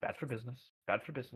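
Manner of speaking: muttered under breath. Describing a man who stops himself mid-sentence, muttering under his breath. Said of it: "under his breath, you just hear barely".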